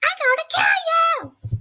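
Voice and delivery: very high cartoon chipmunk voice, drawn-out kill. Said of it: "I nearly sound like Britney from Alvin and the Chipmunks".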